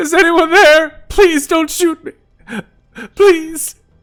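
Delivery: very high, loud, timid fake sobbing. Player voicing Charlie approaching shadows in a game: Charlie's timid fake crying. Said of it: "in a very timid voice, um, like sort of faux crying".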